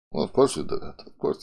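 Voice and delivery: whispered, soft, breathy put-on Russian accent. Speaker quotes how Haskell people react, in a Russian accent imitating Soding. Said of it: "I'm giving a Russian accent".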